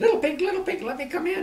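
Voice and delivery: very high, put-on little piggy javelina voice. Reading a story aloud, the narrator voices Coyote faking a javelina voice. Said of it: "voice sound just like another javelina's".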